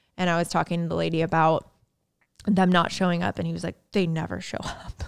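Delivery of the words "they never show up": mock-muttered under breath, much quieter. Retelling what a man with packages said before driving away, imitating a mutter under breath. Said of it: "like under his breath".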